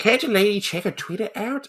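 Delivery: put-on very high, squeaky old-lady voice. Discussing a show, a host tries their best Granny impersonation. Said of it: "I'm trying to do my best Granny impersonation".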